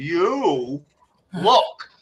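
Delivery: really slow delivery with stretched-out words. Retelling speaking to a chief of staff to annoy him: imitating own really slow delivery. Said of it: "so I said it really, really slow".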